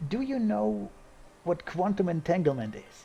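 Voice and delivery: hushed, confiding half-whisper, like a stage whisper. Acting out a bit where a figure speaks to the listener, half-whispering. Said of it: "he whispers to you".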